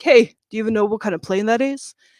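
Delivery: convincing, loud, quick put-on American accent. Retelling what a man at an airport said, in a put-on American accent. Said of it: "really good American accent".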